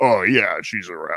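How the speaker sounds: put-on deepened, low, grown-up voice sounding older. Retelling answering the phone as a kid: imitating own attempt to sound grown-up. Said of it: "I was trying to sound, like, uh, more groans".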